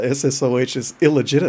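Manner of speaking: slow, sarcastic, tongue-in-cheek drawl. Commenting on another creator who name-dropped someone: sarcastic. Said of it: "I'm saying that sarcastically".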